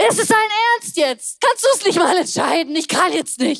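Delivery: frazzled, exasperated, high-pitched acted outburst. Retelling snapping when her husband asked what to eat: retelling flipping out. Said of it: "Und ich flip aus".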